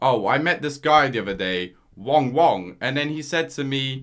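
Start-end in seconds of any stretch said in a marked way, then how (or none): none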